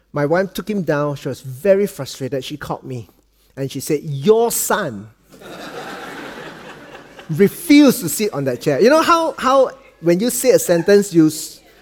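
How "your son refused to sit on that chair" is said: "your son" stressed and drawn out slowly. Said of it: "you emphasize on certain things".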